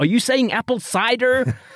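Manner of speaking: high, brash American waitress voice. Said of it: "And she's like".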